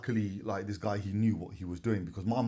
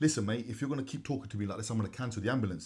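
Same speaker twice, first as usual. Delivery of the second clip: ordinary talk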